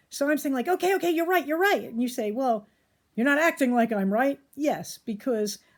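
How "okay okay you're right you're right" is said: put-on emotionally escalating, rushed, high-pitched delivery. Acting out your own side of an argument with someone: mock emotionally escalated. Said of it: "but I'm all emotionally escalated".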